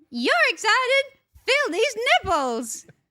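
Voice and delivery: put-on bird voice. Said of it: "You do a good bird voice".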